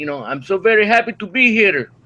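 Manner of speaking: Italian-accented delivery. Greeting everyone on the show: Italian impression. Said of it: "That's a nice Italian impression".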